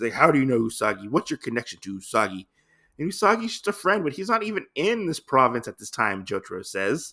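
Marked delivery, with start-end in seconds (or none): 0.1-2.5 play-acted, very angry, furious, stunned, surprised tone. Retelling a villain's reaction to hearing a name: retelling an angry question. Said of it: "very angry that he knows who Usagi is".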